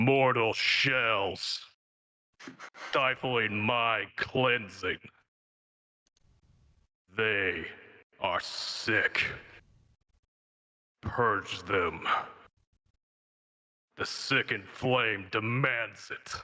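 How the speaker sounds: eerie, strange, ominous, ethereal otherworldly voice. Narrating to the players, voicing a voice heard in their minds, strange and ominous. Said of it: "this strange, ominous, ethereal voice".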